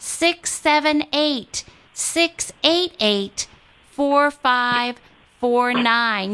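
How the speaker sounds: slow, unhurried delivery. Pledge-drive radio host repeating a number for listeners to dial, said slowly. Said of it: "I'm going to say that slowly".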